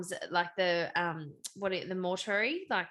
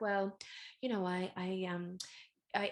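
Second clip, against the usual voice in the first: put-on little baby voice; 5 dB quieter than usual. Imitating an actress on a talk show explaining how she got her E.T. part, little baby voice. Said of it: "talking to a little baby voice".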